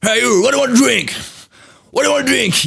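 shrill, high, loud put-on Irish brogue. Retelling a flight steward asking what to drink: imitating an Irish accent. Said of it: "Il parle comme ça, les Irlandais".

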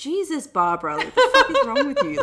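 play-acted high, swooping laughter through the line. Retelling an interview reply to Barbara Walters: imitating someone laughing while talking.

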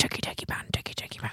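whispered, mocking, taunting put-on voice. Telling her husband how he sounds: imitating husband's techie man voice. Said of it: "You just so sound like".

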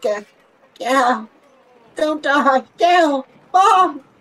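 very high, very loud, very slow pained cry. Retelling what she cried out while in pain, imitating someone in pain. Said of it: "she goes back into pain".

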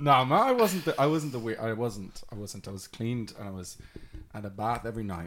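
ordinary delivery

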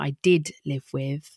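did stressed, said slowly. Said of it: "and there's a key part there".

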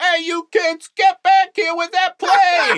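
very high-pitched shout. Acting out an audition as the guy who works at the airport: airport worker yelling at kids. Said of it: "The guy who works at the airport".

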